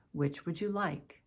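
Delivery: falling tune, voice settling down on like. Teaching English intonation, reading an example open question with falling intonation. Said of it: "Falling intonation".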